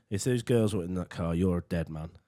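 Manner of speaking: mock-calm cool tone. Retelling how a man confronted the lad in a car: retelling a calm threat. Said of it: "He just looks in all calm".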